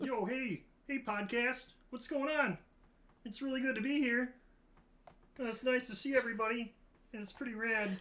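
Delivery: very high, little frog-puppet voice. Trying Kermit for the podcast, greeting the listeners, Kermit the Frog voice. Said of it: "Can you do the Kermit yet".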